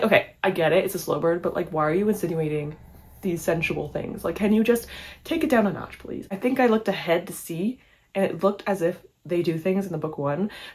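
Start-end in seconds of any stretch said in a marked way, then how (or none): none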